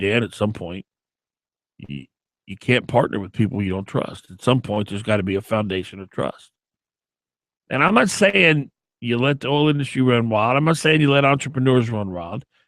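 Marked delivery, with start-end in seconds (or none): 0.0-6.5 grave, serious, very low voice in bass register. Retelling what a former mayor said to him: imitating a deep voice. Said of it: "with this deep voice and said".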